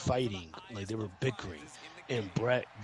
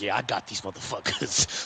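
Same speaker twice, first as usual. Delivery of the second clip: put-on sinister gloating voice, louder; 6 dB louder than usual. Retelling what Brett seemed to think while hugging: imitating Brett, sinister gloating. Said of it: "got this fucking evil, sinister smile".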